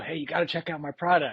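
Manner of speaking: put-on whispering. Retelling a pitch whispered into someone's ear during a photo: retelling own whisper. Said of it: "I'm whispering in his ear".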